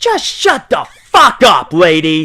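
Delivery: booming, very loud, high snapping scream, voice swinging wildly. Retelling snapping at a woman at a dog park: retelling own scream. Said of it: "I just snap and scream".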